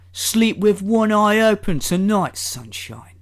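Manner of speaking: London Cockney accent. Reading aloud a post someone wrote here, in a Cockney accent. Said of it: "I had the overwhelming urge to read that in a Cockney accent".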